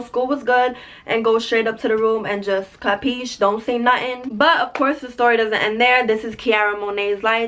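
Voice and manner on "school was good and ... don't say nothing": usual speaking voice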